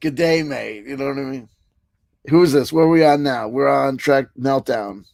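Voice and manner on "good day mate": bad fake Australian accent, slower pace. After telling Corcoran he can't do it, the host tries an Australian accent. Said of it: "I can't do an Australian accent".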